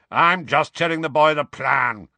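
grumbled, dog-like growl. Moody answers Tonks, who says he's being too cheerful, growling. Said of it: "growled Moody".

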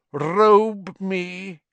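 high, cold, chilling, icy voice. From behind the steam, a figure orders Wormtail to robe him: high, cold voice. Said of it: "said the high, cold voice".

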